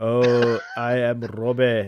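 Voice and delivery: terrible drawn-out Scottish accent. Redoing a reading in the scottish accent an audience member asked for: terrible scottish accent. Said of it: "I should have read it in his Scottish accent".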